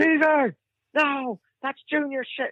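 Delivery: shrill, high-pitched scolding yell. Retelling how he yelled at you over the video while the guys laughed, imitating someone yelling. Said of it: "And he's yelling at me again".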